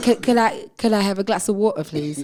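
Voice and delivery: put-on Cockney accent. Joking about returning from London with an accent: put-on Cockney accent. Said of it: "like a Cockney accent".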